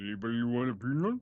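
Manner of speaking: mush-mouthed, words garbled as if mouth full. Speaker shows how to do the voice, then tries it: mush-mouthed voice. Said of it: "talk like you got a mouthful of mouse like mashed potatoes".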